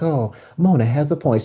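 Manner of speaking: put-on small calm voice. Recapping an episode, acting out the line a character should have said, imitating her little calm voice. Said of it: "done her little calm voice she does".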